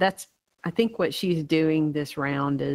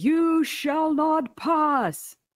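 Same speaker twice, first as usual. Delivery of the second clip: shrill, very high, defiant yelling; 12 semitones higher than usual. Voicing a priest blocking an attacker: yelling a defiant line. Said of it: "he yells out".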